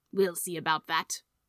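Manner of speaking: usual speaking voice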